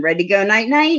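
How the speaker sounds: irritated, annoyed birdlike call. Imitating a pet calling out at bedtime, imitating a loud annoyed bird call. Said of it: "he'll say it really loud and real annoyed".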